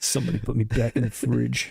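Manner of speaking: fed-up, annoyed, rough, creaky pissed-off voice. Quoting a movie character's line to a friend: imitating a pissed-off movie character. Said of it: "he's all pissed off about something".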